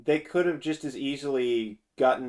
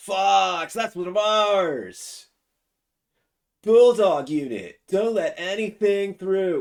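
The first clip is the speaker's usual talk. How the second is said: slow, loud stoner drawl with Fox drawn out; 7 semitones higher, 6 dB louder than usual. Showing how a game character should sound: Bill stoner voice. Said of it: "Bill's supposed to sound like a stoner".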